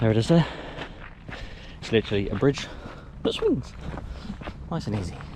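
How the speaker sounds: puffing, breathy, winded and soft. Showing viewers how to do a swing bridge, out of breath. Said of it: "I sound out of breath".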